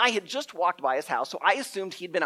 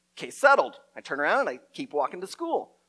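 usual speaking voice

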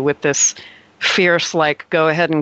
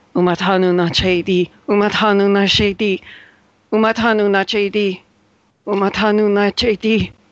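put-on older woman's voice, pitched up; 5 semitones higher than usual. Retelling a voice he hears repeating a phrase, in an older woman's voice. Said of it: "sounds like maybe a woman's voice, an older woman".

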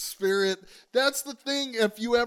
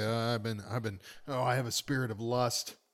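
low, soft priest voice, confessional tone. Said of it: "they say".

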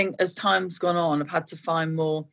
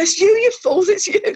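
loud, high, put-on Brummie accent; 14 semitones higher, 8 dB louder than usual. Retelling the crowd shouting at the band on stage, in a Brummie accent. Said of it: "Not in the Brummie accent".

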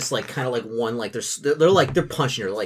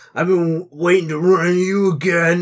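put-on loud, sloppy, pitched-up drunken slur; 6 semitones higher, 6 dB louder than usual. Voicing a drunk man confronting a woman: drunken slurred speech. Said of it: "the man, like, slurs his speech".

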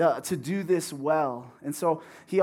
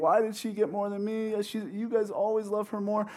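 put-on fussing, tearful, crying childish whine; 4 semitones higher than usual. Retelling a childhood Christmas complaint about gifts: imitating own childhood whining. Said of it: "crying and, whining and fussing and saying".

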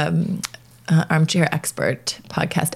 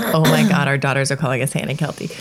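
ordinary talk, nothing marked

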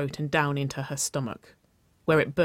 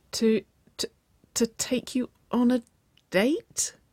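croaking, much higher; 9 semitones higher than usual. Nicole answers Waverly's invitation to a date, croaking. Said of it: "She croaked".

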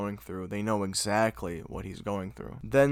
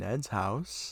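ordinary talk, nothing marked

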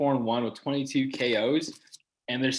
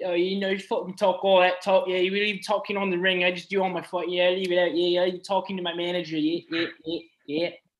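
higher-pitched put-on British accent, boxer-like voice; 6 semitones higher than usual. Imitating a boxer's post-fight talk: british boxer's accent. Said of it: "his accent threw me off".

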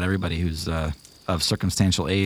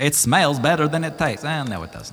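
put-on Kazakh accent, higher pitch; 8 semitones higher than usual. Voicing Ganymede tasting wine: Borat voice. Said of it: "the impression is just Borat".

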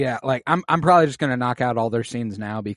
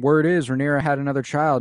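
usual speaking voice

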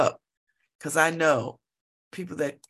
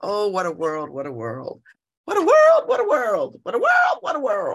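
shrill, swooping storybook wicked witch voice; 6 semitones higher, 5 dB louder than usual. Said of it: "isn't that the woman from um the Wizard of Oz, the Green Witch".

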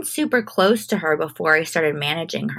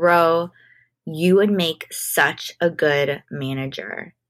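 usual speaking voice

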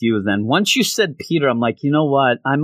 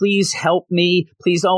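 put-on tearful pleading voice, higher; 6 semitones higher than usual. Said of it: "I'm crying".

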